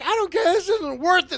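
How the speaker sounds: fed-up tough-guy shouting. Describing enemies who give up and run away, acting out fleeing enemies' yell. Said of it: "that's exactly what they yell out".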